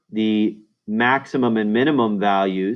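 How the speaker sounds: ordinary talk, nothing marked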